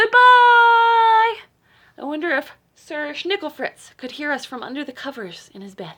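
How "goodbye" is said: very loud, very high, drawn-out stretched yell. Leading a group rhyme, saying goodbye as loud as we can: shouting as loud as possible. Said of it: "let's say goodbye as loud as we can".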